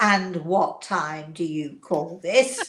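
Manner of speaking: stern, parent-like scolding telling-off tone. Retelling being caught coming home late: imitating daughter scolding like a parent. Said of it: "I hear this voice".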